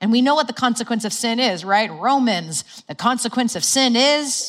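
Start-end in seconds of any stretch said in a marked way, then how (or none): 2.9-4.5 high, enthusiastic building excitement. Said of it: "way to say that so enthusiastically".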